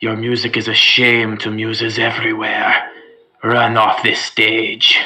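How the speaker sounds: hushed whisper under breath. Casting a spell at a goblin performer in character: whispering under breath. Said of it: "under my breath, whisper".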